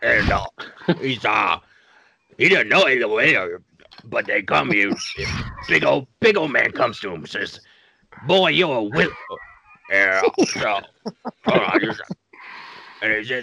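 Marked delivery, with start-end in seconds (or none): 0.0-10.8 character voice, muffled as if mouth full. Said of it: "I want you to do Beetlejuice while eating ice cream".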